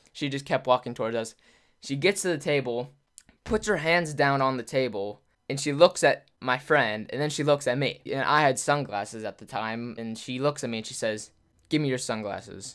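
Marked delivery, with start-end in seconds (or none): 11.7-12.8 acted intimidating, threatening tone. Retelling a woman at the table demanding sunglasses, imitating her intimidating demand. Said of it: "real intimidating".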